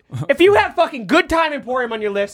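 high, heated, worked-up ranting outburst. Complaining that the others are spoiling people's lists: screaming. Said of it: "Why are you screaming?".

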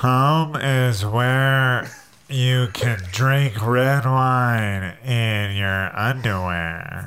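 congested, blocked-nose, stuffy-sounding speech. A player reads a line aloud in a put-on accent: put-on stuffy-nose voice. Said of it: "Stuffy nose".

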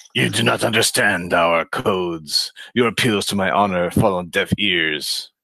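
alien character voice. Voicing the Gorn aide Slasarn during an actual-play game: Gorn aide Slasarn voice. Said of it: "So the Gorn aide, Slasarn. / He took exception to this turn of events. / "This is Officer Leader [name], speaking for [name], Captain Leader. The cruisers [name] and [name] are summoned off station. M".

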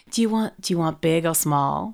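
put-on American accent. Imitating a woman who said she couldn't do the accent, put-on American accent. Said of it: "I can't do the American accent".

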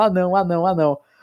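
put-on high, sobbing, screaming little child's voice. Recalling getting shots as a child, acting out past self: retelling childhood screaming. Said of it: "aí eu ficava gritando".

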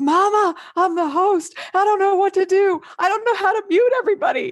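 very high, frantic, panicked yell. Parent retelling the daughter stuck as call host: retelling a panicked yell. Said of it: "And she's yelling".

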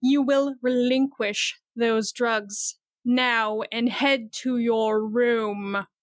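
most menacing tone with "room" drawn out. While someone argues with them, the speaker's character speaks in the most menacing voice. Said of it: "in the most menacing voice say".

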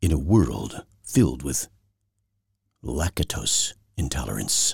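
deep, epic film-trailer narration voice. Host opening a show, doing a movie trailer voice. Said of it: "It's time to do my movie trailer voice".

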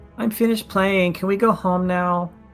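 put-on small dwarven child voice. Voicing a dwarven child running to a caretaker: voicing a dwarven child. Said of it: "one of the dwarven children run over".

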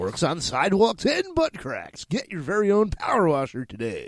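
sing-song radio announcer pitch. Finishing a spoken commercial in a comedy bit, radio announcer voice. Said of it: "You like my radio voice?".

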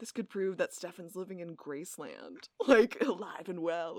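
put-on mocking tone. Retelling a character's sarcastic line to a friend: imitating a mocking tone. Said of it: "I just love how he's mocking her".

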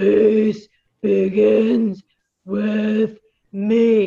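very loud, booming giant-dinosaur voice. Leading listeners to repeat the phrase with hands raised high, saying it like a dinosaur. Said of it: "we can say it like a dinosaur".

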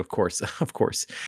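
words chuckled quietly under the breath. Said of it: "she just chuckles under her breath on it".

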